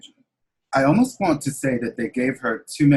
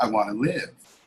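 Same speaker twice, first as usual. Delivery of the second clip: weak, frail, feeble little voice; 2 semitones lower, 4 dB quieter than usual. Retelling what his mother answered, imitating a frail voice. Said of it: "with a frail voice".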